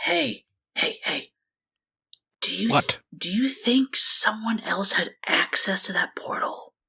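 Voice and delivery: soft, close whisper near the ear. Voicing a character pulling another down to ask something: whispering in character's ear. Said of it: "whispering to his ear".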